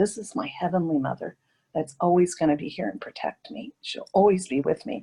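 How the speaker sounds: ordinary delivery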